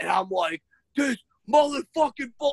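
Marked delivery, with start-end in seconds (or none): 1.0-2.5 mock yelling, pitched up, losing control. Retelling getting a quiz answer wrong with a kid: imitating own past yelling. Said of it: "I'm yelling".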